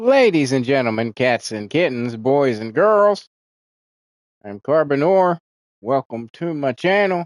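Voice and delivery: inflection given to the final word "channel". Greeting viewers at the start of their channel, inflection at the end. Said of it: "did the inflection at the end".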